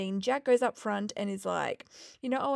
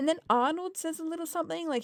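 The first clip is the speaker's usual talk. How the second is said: ordinary delivery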